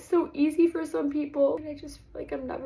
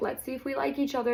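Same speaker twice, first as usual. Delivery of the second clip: ordinary delivery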